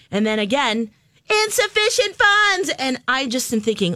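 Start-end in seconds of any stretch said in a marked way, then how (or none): 1.4-2.7 mock very high, shrieked, screamed call-out. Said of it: "And she's screaming this".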